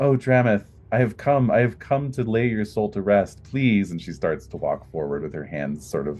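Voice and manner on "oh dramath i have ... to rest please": high, tearful pleading. A game narrator voices Nalian as she sees Dramath, tearful pleading. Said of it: "tears springing to her eyes".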